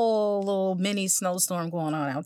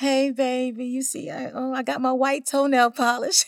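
high, put-on, mock flirty teasing voice; 5 semitones higher than usual. Acting out spring showing her ankle: put-on teasing voice as spring. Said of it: "Like she was teasing us".

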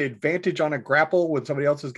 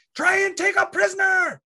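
very high, full yelling cry. Running forward as a character in the game, yelling while running. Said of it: "I run yelling".

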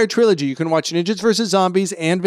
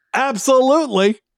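high, grand, put-on announcer-style declaratory voice; 6 semitones higher than usual. Ordering at Starbucks with no introduction: put-on declaratory voice. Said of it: "in that declaratory voice".

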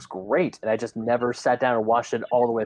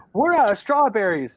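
mock panicky, frantic, high shout; 10 semitones higher, 4 dB louder than usual. Retelling a scene where a daughter finds a body: imitating a frantic shout. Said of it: "Like, very frantic".

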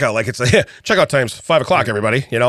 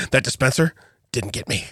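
mock disdainful tone, quieter; 5 dB quieter than usual. Retelling what his son said after dodging the soap: imitating someone's disdain. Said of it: "he says it with, like, that disdain".

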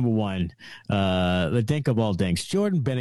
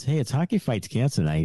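usual speaking voice

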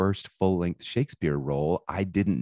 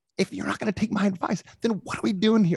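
shrill, very high, snapped yell, losing temper. Retelling snapping at a student during a thesis session: retelling own yell. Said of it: "I yelled at him".

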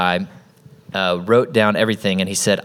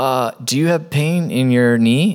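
put-on nervous, awkward man's voice, higher; 4 semitones higher than usual. Retelling how a nervous first-timer approached a stranger: imitating a nervous awkward man. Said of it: "so awkward, so nervous".

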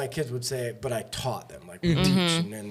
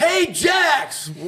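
put-on yell, higher and louder; 8 dB louder than usual. Retelling a dad yelling from the stands at a game: imitating Mark screaming from the crowd. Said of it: "is up in the crowd screaming".

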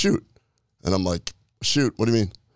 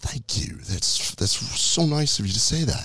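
very polite, courteous, proper put-on British accent; 4 semitones higher than usual. Retelling what an actor said back to a compliment: imitating a polite British accent. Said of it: "so polite in a British accent".

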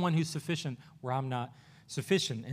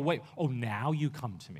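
slow, scornful, scoffing sneer; 4 semitones lower, 5 dB quieter than usual. Acting out a reply Jesus does not give the father: mock sneering. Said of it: "He doesn't kinda sneer at him and go".

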